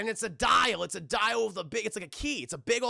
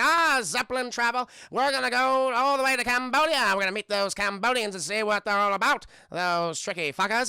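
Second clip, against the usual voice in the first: put-on transatlantic American accent; 3 semitones higher, 5 dB louder than usual. Retelling how a movie character talks, in a transatlantic american accent. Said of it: "He has a transatlantic uh, American accent".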